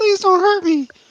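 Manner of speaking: very high-pitched, begging, pleading voice. Pitching a robbery plan, voicing Javi as the victim: imitating Javi pleading. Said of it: "And Javi can be like".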